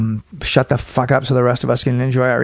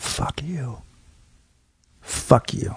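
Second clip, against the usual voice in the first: play-acted slow, furious whisper, up close; 7 dB quieter than usual. Retelling walking over to a heckler close in her face: imitating quiet fury. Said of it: "I quietly walked over to her".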